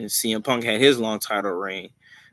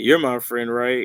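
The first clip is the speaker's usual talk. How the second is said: mock beaten-down, defeated, deflated voice; 2 semitones higher, 3 dB louder than usual. Retelling one wrestler asking another if they are friends: imitating a defeated voice. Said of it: "with, like, the defeated voice".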